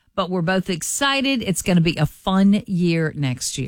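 plain

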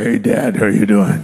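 deep, very low put-on voice. Retelling a son faking his brother's voice to his father: deeper voice imitating his brother. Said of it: "he tries to imitate the voice of his brother, who I imagine was deeper".

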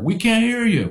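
put-on very high-pitched, tough New York accent, hollering. Recounting workers at the pile answering the president, imitating a New Yorker. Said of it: "And imagine a New Yorker".

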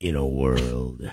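very low, deep movie trailer announcer delivery. Asked whether he can do movie trailer stuff, trying a movie trailer voice. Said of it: "that kind of movie trailer stuff".

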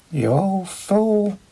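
mild, gentle voice. Baltor, after a long look passes between the two, softly. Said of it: "Baltor said softly".

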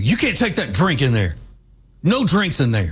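put-on sharp, snapping delivery. Retelling how a worker stopped a guy carrying a drink: imitating someone snapping. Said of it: "snapped at him".

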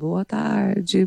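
sleepy, mumbled speech. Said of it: "Às vezes ela tá com sono".

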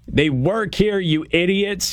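high-pitched exasperated yelling.

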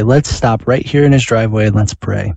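ordinary talk

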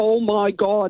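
put-on Derry-accented speech. Retelling a cousin from Northern Ireland exclaiming from a toilet, in a thick Derry accent. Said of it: "in a really thick Derry accent".

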